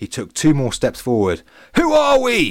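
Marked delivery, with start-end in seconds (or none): 1.8-2.5 very high, shrill, all-out shout. Narrating a man stepping forward into a silent arena, shouting even louder. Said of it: "He shouted again, even louder".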